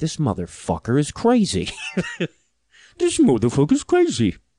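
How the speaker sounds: weird, odd, swooping sing-song voice. Imagining a reaction to fifteen minutes of Pat Robertson: Dalai Lama voice. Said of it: "I was trying to do a Dalai Lama impression".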